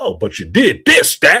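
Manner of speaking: animated, swooping speech, switching into home dialect. Retelling how a film character spoke among her own people: imitating a character code switching. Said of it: "she talked just like them".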